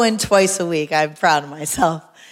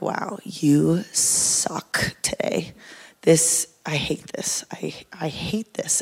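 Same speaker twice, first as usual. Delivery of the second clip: put-on mumble, quieter and slower; 2 semitones lower, 7 dB quieter than usual. Retelling a hard gym workout, imitating own muttering under breath. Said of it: "I start mumbling under my breath".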